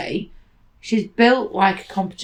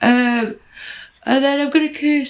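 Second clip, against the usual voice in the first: high-pitched words spoken through a yawn; 6 semitones higher than usual. Speaker listing upcoming plans to viewers, talking through a yawn. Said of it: "sorry for yawning".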